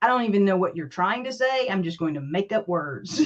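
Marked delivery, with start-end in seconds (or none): none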